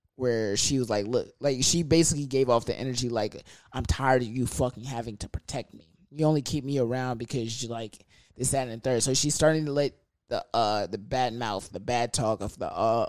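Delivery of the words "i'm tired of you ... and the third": ordinary delivery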